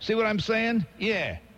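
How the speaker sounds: put-on East Side street accent.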